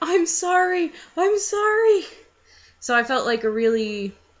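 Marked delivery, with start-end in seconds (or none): 0.0-2.0 high, drawn-out, apologetic screaming. Retelling screaming an apology after a collision: imitating own past screaming. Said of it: "But I'm still there screaming at him".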